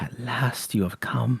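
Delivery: put-on crackly, cackling old crone voice. Narrator voicing a hunched crone in a game scene, cackling crone voice. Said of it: "her voice cackles like dry weeds".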